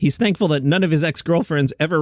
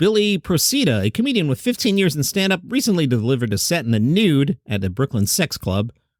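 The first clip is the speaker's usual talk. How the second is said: ordinary talk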